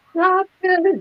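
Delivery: very high, pleading squeal. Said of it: "what I said was".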